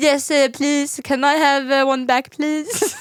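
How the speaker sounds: high-pitched, clumsy put-on Swedish accent. Retelling how the other speaker mocked cashiers: imitating a mocking bad Swedish accent. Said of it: "making fun of Swedish accent".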